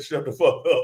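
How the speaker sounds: plain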